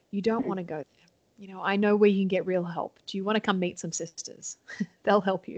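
mock-soothing, calm, gentle delivery. Retelling what a man said to a woman, retelling calm, gentle words. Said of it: "he just said to her calmly and gently".

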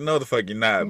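usual speaking voice

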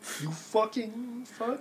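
very high, little mumble under the breath. Muttering an insult at a villain: mumbled under breath. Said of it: "you mumble that under your breath".

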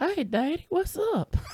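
put-on very high, hushed, soft creepy old-man voice. Speaker imitates how a woman greets the speaker: Herbert-like voice of a woman. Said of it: "That's a Midwest woman's voice of Herbert".

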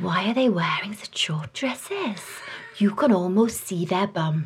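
put-on Welsh accent. Looking at dresses, the speaker quotes Charlotte in a put-on Welsh accent. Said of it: "shall I try and do a Welsh accent?".

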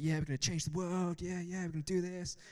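put-on pumped, eager, hyped-up, gung-ho enthusiasm. Recalling own hype before going out to pray for people, imitating own past excitement. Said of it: "we'd had all this hype".

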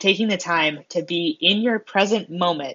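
ordinary delivery

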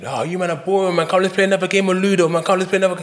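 high, mocking, whining voice.

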